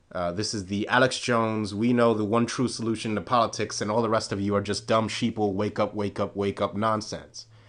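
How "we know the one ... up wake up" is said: ordinary talk, nothing marked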